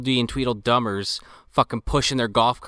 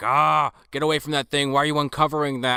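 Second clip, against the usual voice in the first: mock angry, raving, ranting father voice; 3 semitones higher than usual. Retelling a movie scene where the father yells at his daughter: imitating a ranting father. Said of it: "ranting and raving".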